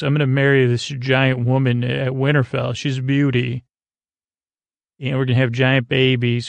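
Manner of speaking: normal talking voice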